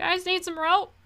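high, shouted call. Voicing Nori, who looks over the side and calls down: shouting down from above. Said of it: "he shouts down to you".

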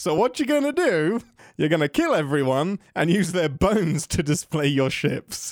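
accusatory, swooping voice. Mimicking how the other speaker repeated the plan back: imitating an accusing tone. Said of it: "You said it like I was a sociopath".

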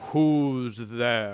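low, weighty, deep, resounding voice. Narrating the door itself answering after the knocker is knocked: deep booming voice. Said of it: "you hear a deep booming voice say".

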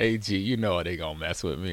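plain

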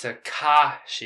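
stress on syllable ka. Teaching the name's pronunciation, with stress on ka. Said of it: "You gotta put the emphasis on the ka".

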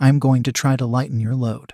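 plain reading voice

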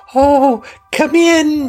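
bright, gentle, cheerful, very high voice. Playing a character who welcomes a visitor inside, in a quiet, soft, cheerful voice. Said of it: "You're this very quiet, soft, cheerful voice".

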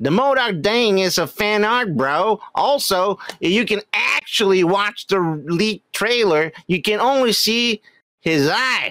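put-on Southern US accent. Asked to read someone's comment again in a southern accent: southern accent. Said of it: "in southern fucking accent?".

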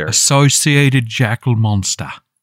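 English accent. Saying a creature's name on request, English accent. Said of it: "say Anubis-associated jackal monster in an English accent".

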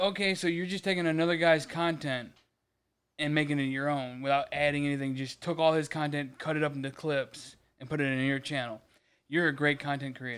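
plain

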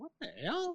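high, hushed, stunned disbelief.

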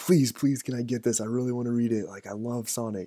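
put-on eager, pleading, childlike begging voice. Retelling begging mom for a comic book at the checkout: imitating own childhood begging. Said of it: "I remember begging, begging my mom, like".

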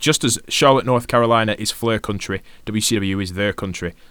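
ordinary talk

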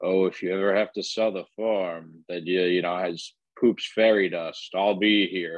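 evil villain voice. One speaker mocks another's trade offer, in a stereotypical movie villain voice. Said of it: "You sound like the evil, like, villain".

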